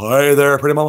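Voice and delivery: corny, cheesy cartoon ladies'-man voice, laid on thick. Streamer doing voices requested by chat: Johnny Bravo voice. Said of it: "Johnny Bravo".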